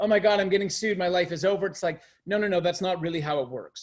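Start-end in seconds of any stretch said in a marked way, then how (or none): 0.0-1.7 mock crying, tearful, panicked voice. Retelling what panicked clients say when facing a complaint: imitating a crying client.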